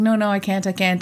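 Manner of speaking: ordinary delivery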